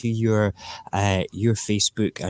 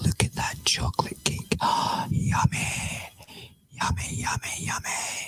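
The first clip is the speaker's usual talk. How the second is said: speaking in a whisper, quieter. Looking at a chocolate cake as the broadcast ends: whispering. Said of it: "Just talking in a whisper".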